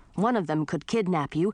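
ordinary delivery

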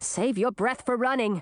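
ordinary delivery

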